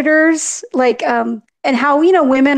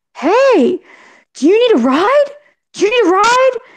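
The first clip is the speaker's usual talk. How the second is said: high, loud calling-out yell; 8 semitones higher than usual. Retelling how someone who pulled over called across: imitating someone yelling. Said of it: "And then he yelled".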